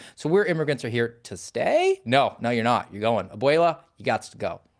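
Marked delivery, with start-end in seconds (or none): 0.3-2.0 question-like rising pitch on stay. Showing how uptalk makes a statement sound like a question: rising pitch on stay. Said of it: "if we do it with the uptalk, ... then it sounds like a question".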